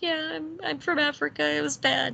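glum, sorrowful tone. Retelling the new brother's nod to his sibling: imitating a sad reply. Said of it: "nods sadly at him".

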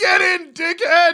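very high, loud screamed yell. Retelling how the ambulance driver opened the door: imitating someone screaming. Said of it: "the driver opening the door and just screaming".

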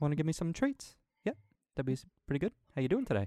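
character voice in a New Zealand accent. Showing the voice you do for the dog, speak as the dog in a Korg voice. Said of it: "I do Korg, which is basically Taika Waititi".

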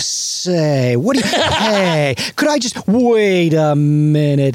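put-on slow, old thirties screwball comedy delivery. Imagining the whole movie as a comedy: thirties screwball delivery. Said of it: "thirties screwball delivery of".

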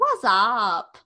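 put-on frog voice. Showing how they would greet her, doing the frog's voice. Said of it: "But I'd say it like the frog".

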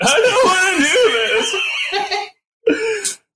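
put-on crying outburst. Retelling the moment he started smashing things, acting out crying. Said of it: "just start smashing and crying".

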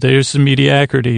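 normal talking voice

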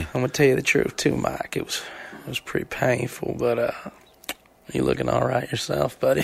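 put-on soothing drawl. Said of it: "He's so soothing".

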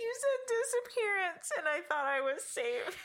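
very high-pitched, teary, crying voice. Reacting to a scary story another speaker is telling, crying. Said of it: "I'm literally crying".

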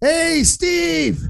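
acted, very high, rasping, rough yell. Retelling a man standing up and yelling at the other team's goalie: retelling a yell. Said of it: "he yells at the goalie on the other team".

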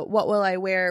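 ordinary talk, nothing marked

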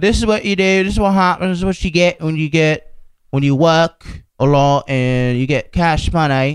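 put-on Australian accent. Imitating a man talking to the camera on his Instagram, in a bad Australian accent. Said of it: "I don't know how to do Australian".

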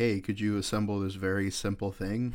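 ordinary talk

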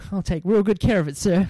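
sudden put-on small American boy voice. Retelling own reply to Dad giving a first car: small American boy voice. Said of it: "a small American boy all of a sudden".

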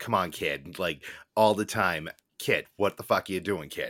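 put-on Boston accent. Imitating how a local talks: mock boston accent. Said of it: "Was it just like this".

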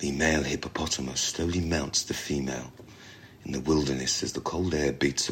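soft, low, soothing nature-documentary narrator voice. Asked for an Attenborough impression, narrating a hippo scene: Attenborough impression. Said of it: "Do your best Attenborough impression. ... he's got such a soft voice, and it's so soothing".

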